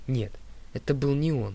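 ordinary delivery

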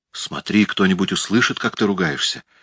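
ordinary delivery, nothing marked

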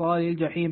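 ordinary delivery

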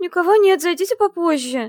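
tiny, thin, very high, frightened squeak. Hiding behind a locked door from a monster, the heroine answers: thin frightened squeak. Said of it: "тоненько с перепугу пропищала".

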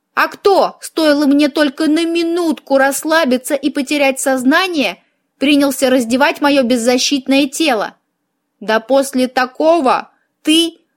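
ordinary delivery

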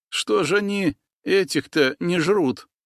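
quavering, trembling, frightened, high-pitched voice. Semka, as predator lizards walk past, asks a question in a trembling voice. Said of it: "дрожащим голосом промолвил Семка".

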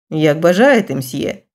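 plain reading voice

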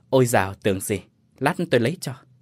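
ordinary talk

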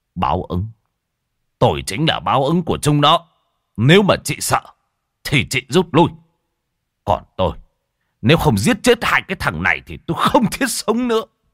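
harsh, gritted-teeth fury, rising. Narrator reads a man answering a woman's warning about retribution, harsh angry voice. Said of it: "gằn giọng giận dữ".

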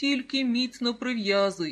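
said through a laugh. A mother answers her young son's remark, laughing. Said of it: "засміялася мама".

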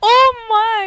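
high, loud mock old lady gasp.

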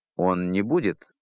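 hesitating, faltering, trailing off. Captain Bannerman starts answering Olein, then falters: hesitating, trailing off. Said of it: "но замялся".

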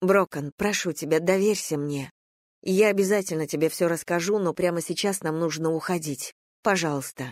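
plain reading voice

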